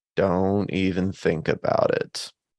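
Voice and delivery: slow, flat, perfectly even deadpan monotone. Retelling the range master speaking over the speakers, slow monotone voice. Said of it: "in perfect pitch, monotone, slow voice said".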